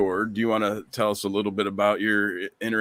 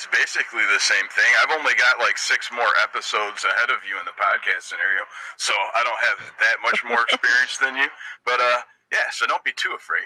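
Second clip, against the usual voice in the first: speaking through a voice filter. Reassuring a fellow podcast newcomer, speaking with the voice filter still on. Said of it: "I still have the voice filter on".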